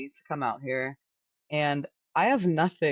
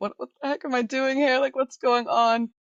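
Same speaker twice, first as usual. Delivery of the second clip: tearful, very high-pitched crying wail; 9 semitones higher, 4 dB louder than usual. Retelling a phone call to a husband while alone abroad: imitating own past crying. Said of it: "I was calling my husband crying".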